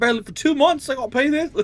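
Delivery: acted-out very high, loud, pissed-off angry griping. Retelling a customer complaining about the price: imitating an angry complaining guy. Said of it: "He was pissed".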